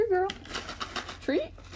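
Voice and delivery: high, rising, coaxing pet voice.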